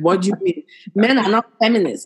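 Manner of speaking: normal talking voice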